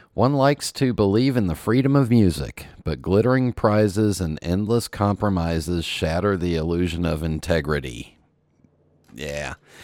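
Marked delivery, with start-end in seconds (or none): none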